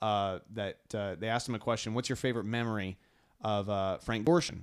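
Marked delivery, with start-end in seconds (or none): none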